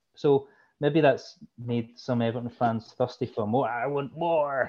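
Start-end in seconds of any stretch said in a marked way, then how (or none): 3.7-4.7 bad put-on American accent. Talking about Everton fans wanting more, in a put-on American accent. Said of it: "is that your American accent?".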